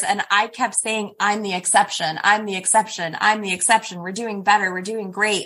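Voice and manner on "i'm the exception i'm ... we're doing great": normal talking voice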